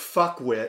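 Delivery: plain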